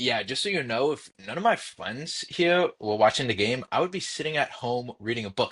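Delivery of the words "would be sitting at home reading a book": ordinary talk, nothing marked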